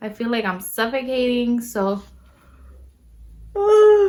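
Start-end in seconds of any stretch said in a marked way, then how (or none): 3.5-4.1 very high-pitched, very loud, big yawn. A pregnant speaker describing being out of breath, yawning. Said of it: "I'm sorry. I'm always yawning".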